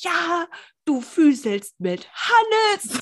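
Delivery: mock drawn-out furious voice. Speaker retelling what the listener angrily said to her, mock-angry accusation. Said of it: "du warst so richtig sauer".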